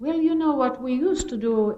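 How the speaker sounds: put-on crazy, loud Irish accent. Quoting what one of the tough Irish women used to tell her, in a crazy Irish accent. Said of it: "that's a crazy accent".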